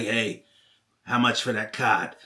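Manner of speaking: smoky kind of voice. Imitating a nine-year-old kid asking a card price: imitating a smoky voice. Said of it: "they already had kind of that smoky".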